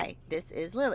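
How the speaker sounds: plain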